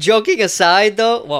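high, loud voice breaking nastily mid-phrase. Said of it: "my voice just cracked nasty".

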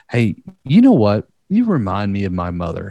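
offhand, casual, nonchalant, breezy sing-song. Suggesting what to say to some random person, nonchalant. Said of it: "just like say it so nonchalant".

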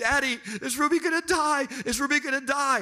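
mock weepy, upset child voice, high and tearful. Retelling the kids asking about the sick family bird: imitating crying kids. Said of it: "the kids are crying".

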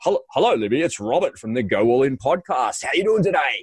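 announcer-style on-air radio voice. Introducing himself to a LinkedIn contact and his podcast, in a radio voice. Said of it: "I use my radio voice as well".

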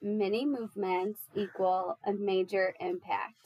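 normal talking voice

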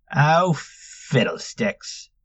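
muttered, muttering under the breath. Narrator reads Tiggy reacting as a new voice interrupts a story, muttering. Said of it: "Tiggy muttered".

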